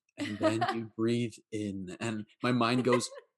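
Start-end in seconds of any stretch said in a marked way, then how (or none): 0.2-2.0 guided meditation instructor tone. Retelling how meditation guides talk: imitating a guided meditation voice. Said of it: "they have that voice where they're like".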